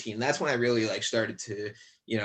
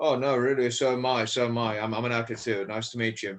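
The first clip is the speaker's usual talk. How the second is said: strong, laid-on put-on British accent. Retelling shaking an actor's hand and his reply, imitating Doug's British accent. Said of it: "that's my British accent".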